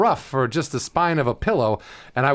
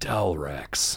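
voiceover announcer delivery, lower and quieter; 10 semitones lower, 7 dB quieter than usual. Taking turns saying words for a joke voiceover demo reel: voiceover voice. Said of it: "say it in a voiceover way".

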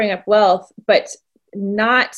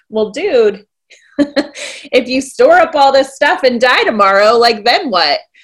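loud, friendly, buddy-to-buddy joking tone; 5 dB louder than usual. Showing how a passage sounds when read in a buddy joking tone. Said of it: "if you read it in a kind of a buddy joking with you".

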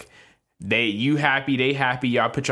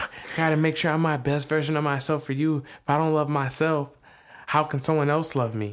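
sappy, overly sweet greeting-card voice, pitched up; 6 semitones higher than usual. Mimicking the other speaker's words after teasing them: mocking imitation, sappy Hallmark card. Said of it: "Why you always gotta sound like a Hallmark card?".

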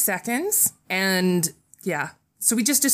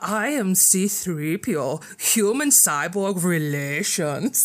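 put-on German accent; 3 semitones lower than usual. Playing an accent game, saying a set phrase in a German accent.

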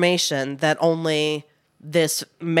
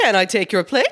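put-on higher child voice; 5 semitones higher, 4 dB louder than usual. Imitating the kid who picked up plates tonight: imitating the waiter kid. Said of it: "What did he sound like?".

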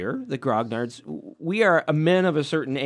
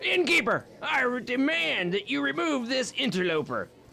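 put-on old prospector voice, much higher; 9 semitones higher, 5 dB quieter than usual. In a Dungeons and Dragons nursing-home role-play, a character speaks in an old prospector voice. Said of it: "we sound like a bunch of you know 49ers".

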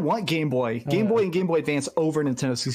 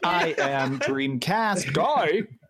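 put-on robotic voice like early computer speech. Imitating the early AI talking programs: imitating an early AI talking program. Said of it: "early A I talking programs that are like".

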